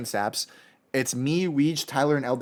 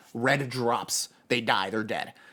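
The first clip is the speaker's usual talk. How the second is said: ordinary delivery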